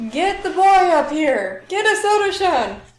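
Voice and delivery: high-pitched, shrill, very loud bellowing shout. Role-playing a character calling for the boy to come up, yelling. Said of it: "yell for".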